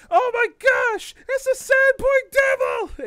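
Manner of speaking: terrified, very high, very loud scream. Narrating a player's swooping arrival, voicing the panicking townsfolk: panicked townsfolk cry. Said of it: "they they begin to panic for a moment".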